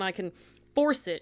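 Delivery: plain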